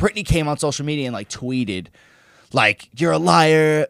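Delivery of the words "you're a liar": put-on erratic voice. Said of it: "you know how [name] talks like a crackhead".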